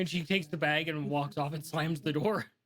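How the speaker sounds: plain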